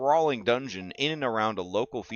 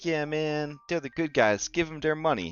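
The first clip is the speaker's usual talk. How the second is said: casual, put-on bro voice, pitched up; 5 semitones higher than usual. Complaining that a game publisher is taking money, sounding like a real bro. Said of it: "Try to sound like a real bro".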